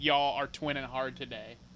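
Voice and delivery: ordinary talk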